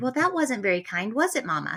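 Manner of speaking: ordinary delivery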